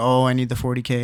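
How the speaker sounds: put-on mocking, taunting tone. Retelling how others taunted a player: imitating someone mocking. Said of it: "They're basically making fun of him".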